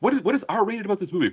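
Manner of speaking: put-on angry voice. Retelling a friend's mom objecting to signing: imitating a pissed-off mom. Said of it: "And she was pissed".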